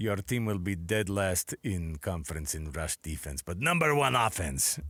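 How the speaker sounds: put-on fortune-teller voice, Eastern European accent. Imagining a wild fortune teller's prediction about a football team: Eastern European psychic lady voice. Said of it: "Eastern European uh, psychic lady voice".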